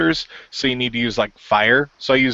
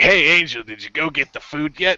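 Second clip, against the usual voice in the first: mimicked nagging voice, higher; 4 semitones higher than usual. Retelling how the helper keeps reminding the player to get food: imitating a nagging game character. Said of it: "He's like".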